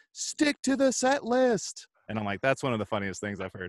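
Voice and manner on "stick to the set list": acted, very high, very slow top-of-lungs yell. Telling a concert story, imitating a friend shouting at the band at the top of his lungs. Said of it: "shouts at the top of his lungs".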